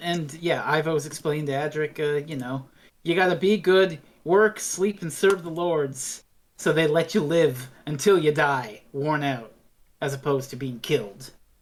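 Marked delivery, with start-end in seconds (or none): none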